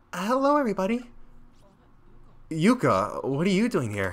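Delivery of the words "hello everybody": put-on overdone, very high little-girl voice pushed way up. Yuka enters and greets everybody, in Yuka's very high voice. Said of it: "I've done high voices before, but this is a little bit much".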